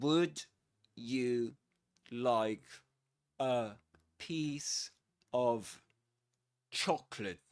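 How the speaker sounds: slow, halting, careful, word-by-word speech with breaks. Demonstrating an example phrase at slow speed: slow, careful speech. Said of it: "Let's say it's slower".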